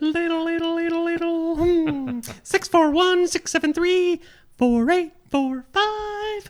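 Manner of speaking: high character voice, drawn-out "five". Asked to read out a phone number, answering in a high Toothy voice. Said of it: "it's a hard note to hit. It's pretty high".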